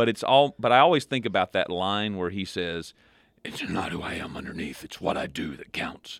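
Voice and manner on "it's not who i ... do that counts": soft, hushed voice sounding sick and ill. Quoting a favorite line from the Batman movies, in a Batman impression. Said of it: "sounded like a person who needs to go to the doctor".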